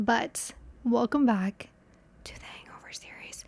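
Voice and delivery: hushed whisper, under the breath. Welcoming viewers back to the series with someone nearby having a bad day, whispering. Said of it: "I don't know why I'm whispering that".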